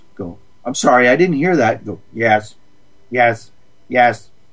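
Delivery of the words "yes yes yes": flat, monotone, mechanical robotic voice. Showing how to answer them, the speaker demonstrates in a robot voice. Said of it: "Be a robot".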